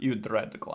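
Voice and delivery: put-on Russian accent. Repeating the translator's movie line: imitating a Russian-sounding accent. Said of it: "He's very Russian?".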